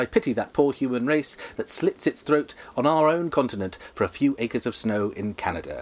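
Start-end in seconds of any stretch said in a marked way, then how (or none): none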